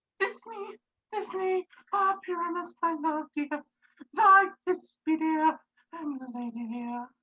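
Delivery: tiny, very high little voice. Asking to play Thisbe too, he performs Thisbe's lines in a monstrous little voice. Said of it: "I'll speak in a monstrous little voice".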